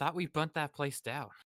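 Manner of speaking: throwaway muttered aside. Voicing Tamati muttering during another character's story: muttering under his breath. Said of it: "Tamati just under his breath".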